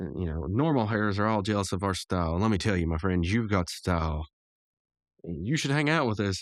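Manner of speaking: ordinary delivery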